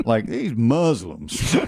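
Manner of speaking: put-on Southern accent. Retelling someone's punchline in a southern accent. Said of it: "with a Southern accent".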